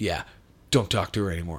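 super deep, dropped bass voice. Retelling how a big man warned him off his sister: Rich Ward's super deep voice. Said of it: "he's got a super deep voice".

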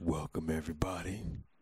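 put-on, low, hushed, creepy voice. Opening the recording, the speaker greets everybody in a put-on creepy voice. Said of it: "You back with the creepy voice".

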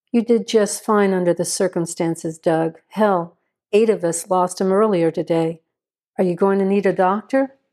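ordinary delivery

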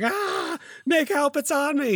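very high, terrified, panicked cry. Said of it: "He's like".

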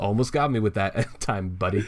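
put-on smug character tone. Recapping a fight, a player quotes Coyote after Damara's attack; mock-smug Coyote line. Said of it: "smug ass Coyote just goes".

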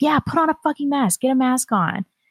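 mock berating yell, high-pitched. Telling how passersby yelled at a family member, retelling passersby yelling. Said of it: "passersby started yelling at her too".

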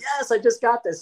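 play-acted high, thrilled, triumphant excited scream. Retelling pulling a rare card alone at home: imitating own screaming.

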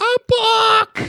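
acted very high child scream, last word stretched. Describing a child carried away from a bookstore, imitating a screaming child.

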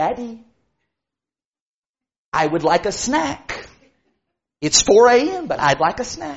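very quiet, soft, polite little voice. Retelling what the baby said to Daddy in the night, imitating baby's quiet polite voice. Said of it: "baby said in a very quiet and polite voice".

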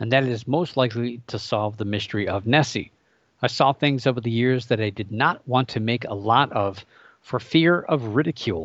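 normal talking voice

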